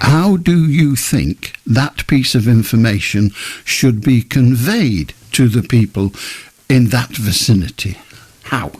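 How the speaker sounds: slow, deliberate, spelled out word by word. Repeating a question to the other speaker after an unclear answer, speaking slowly. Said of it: "I'm going to do it again slowly".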